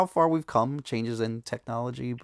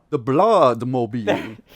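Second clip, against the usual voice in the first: put-on vampire voice, much louder; 8 dB louder than usual. After asking Steve for his vampire voice, the speaker tries a vampire voice. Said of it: "What's your vampire voice".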